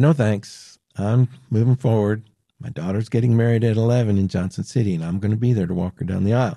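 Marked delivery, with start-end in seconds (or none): none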